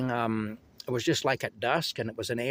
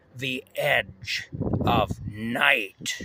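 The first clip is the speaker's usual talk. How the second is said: eerie, creepy announcer voice, intoning. Recalling a broadcast opening, imitating the announcer's really creepy voice. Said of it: "this announcer came on with this really creepy voice".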